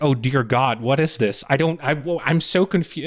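put-on blurted shout, shocked and lost. Retelling a partner's reaction to a film trailer: imitating someone shouting. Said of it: "she just started shouting".

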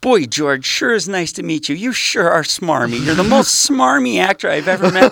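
mock shrill, strung-out, very high, very loud yelling. Retelling meeting an actor while high, aggressively shaking his hand: imitating himself greeting while high. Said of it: "I'm ripped on mushrooms and coke and ecstasy".

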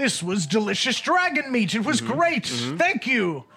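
character voice yelling. Narrating a character walking out of a shop in the town square: Arthas yelling. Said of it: "just yelling".

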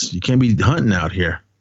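ordinary delivery

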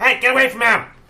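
very loud, very high booming voice. Game narrator voicing an unseen stranger calling out to a player, in a booming voice. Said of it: "a voice booms out".

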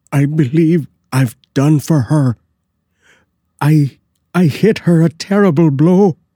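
loud, hoarse, very high-pitched cry. Narrator reading a man's words after learning the ghost was someone dressed up: loud, hoarse voice. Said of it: "he added in a loud, hoarse voice".

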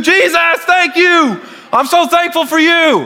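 very high, slow, drawn-out cheering yell. Imagining church people cheering like at a ball game: imitating someone yelling praise. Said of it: "I'm gonna do it too".

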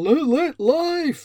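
loud, high, shouty put-on vlogger voice. Showing how vloggers pronounce a channel name, in a shouty vlogger voice. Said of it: "It's in that kind of weird, shouty version that vloggers put on".

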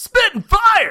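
very high, very loud video game announcer voice. Announcing the name of a new show segment, in an arcade video game voice. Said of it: "You sound like a video game. Like an arcade game or something".

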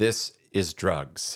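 deep-voiced commercial announcer voice. Recalling an anti-drug commercial, a speaker imitates its narrator; deep-voiced commercial narrator. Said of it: "this guy comes on with a deep voice".

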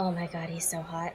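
muttered under the breath, very quiet. Playing Penny, speaking so only Zeke can hear: said under the breath. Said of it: "under my breath".

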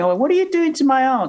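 high shout, called out from a distance. Retelling voices heard from the front of a police station: imitating someone shouting. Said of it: "she's shouting".

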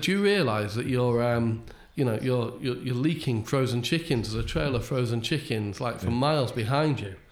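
ordinary talk

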